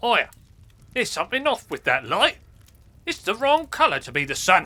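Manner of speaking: high-pitched crow character voice. A crow companion speaking to Aya, in a crow companion voice. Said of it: "[name] and her crow companion".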